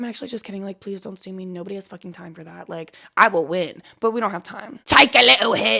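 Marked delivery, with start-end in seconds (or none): 4.8-5.8 loud, rasping, rough pirate-like growl. Speaker joking about being sued, pirate-like voice. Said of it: "I sounded kind of like a pirate right there".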